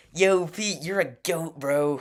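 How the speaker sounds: very loud, slow, drawn-out call. Showing how they imitate Jesse's famous quote: mock Jesse voice. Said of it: "a mock Jesse voice".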